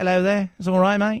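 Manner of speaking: put-on British accent. Showing how a doctor who talks like this sounds: put-on British accent. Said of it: "talks like this".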